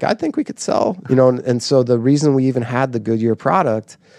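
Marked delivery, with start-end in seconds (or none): 0.0-1.0 very high voice breaking mid-line. Retelling speaking up to the whole room after the boss shouted, imitating own cracking voice. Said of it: "my voice started to crack".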